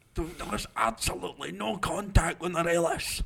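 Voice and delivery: put-on livid voice. Retelling how a pundit sounded after a decision went against Rangers: imitating someone livid. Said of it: "you could tell he was livid, and he was like".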